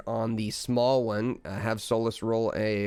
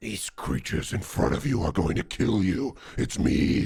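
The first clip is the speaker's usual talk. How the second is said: warped, distorted inner voice; 2 semitones lower than usual. Narrating a voice like Zim's inside someone's head, now in a distorted Zim voice. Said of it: "but it sounds distorted".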